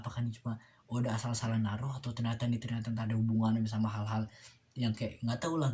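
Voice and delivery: ordinary delivery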